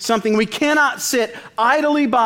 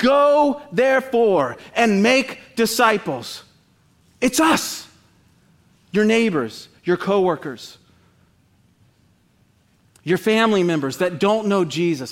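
fired-up, worked-up, slow passionate preaching; 2 semitones lower than usual. Preaching to brothers and sisters about the command to make disciples, worked up. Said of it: "I'm a little worked up this morning".

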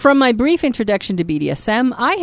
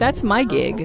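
play-acted petulant, put-out, sulky pouting; 3 dB quieter than usual. Imitating Michelle as she pouts: imitating Michelle pouting. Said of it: "she's pouting right now".

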